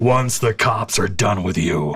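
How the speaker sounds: huge, towering voice of a giant. Speaker voicing a giant character addressing another character, huge booming voice. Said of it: "Huge booming voice".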